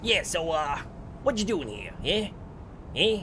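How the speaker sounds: put-on New York street accent. Reading an interactive story aloud, voicing a character in a brooklyn accent. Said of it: "I'm gonna be talking in a Brooklyn accent".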